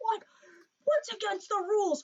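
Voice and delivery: very high, shrill, outraged, indignant screech. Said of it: "he starts screaming at the ref".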